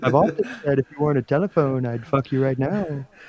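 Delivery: seductive, sultry phone-sex come-on voice. Continuing the bit after being asked about the voice: Donald Trump doing phone sex voice. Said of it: "Why do you sound like Donald Trump doing a phone sex voice".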